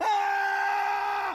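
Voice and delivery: very high, very loud full-lung yell.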